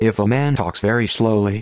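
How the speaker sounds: plain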